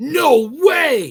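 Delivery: sudden loud, high shouted outburst. Reacting to a legend about a creature that dissolves into water: yelling. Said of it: "sorry for yelling".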